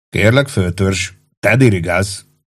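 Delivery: ordinary delivery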